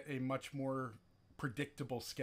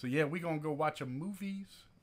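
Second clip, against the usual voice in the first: loose, half-done voice with broken English; 3 semitones higher than usual. Wrapping up before going to a movie: Rob impression. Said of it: "my almost Rob impression".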